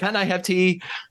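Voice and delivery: blunt, assertive tone. Imagining someone ordering in a coffee shop: imitating someone very assertive. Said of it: "says everything really assertively".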